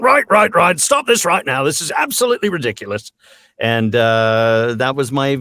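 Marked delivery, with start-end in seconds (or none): 0.0-3.1 very high-pitched voice, swooping up and down. Retelling own beer commercial line, barging in: John Cleese-like voice. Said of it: "sort of sounded like John Cleese".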